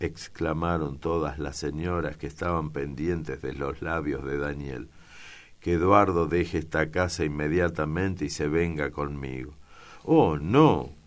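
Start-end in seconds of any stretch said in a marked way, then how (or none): 10.0-10.8 loud, proud, lofty, haughty exclamation. Eduardo rises, answering Daniel's demand that he leave the house: haughty exclamation. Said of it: "Exclamó Eduardo levantándose, iluminados sus ojos por un relámpago de altivez".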